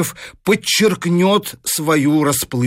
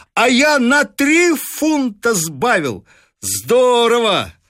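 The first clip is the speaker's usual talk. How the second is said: glad, happily bursting, cheerful, sing-song, pitched up; 7 semitones higher than usual. Narrator reads a man running in to tell his household, joyful. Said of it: "весело вбегает в столовую и радостно делится".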